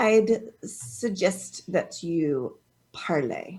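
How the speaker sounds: very slow, soft, drawn-out enunciation. Player speaks as a character to someone who may not understand, very slowly. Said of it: "she's just going to say very slowly".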